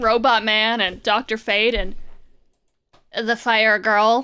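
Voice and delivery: ordinary talk, nothing marked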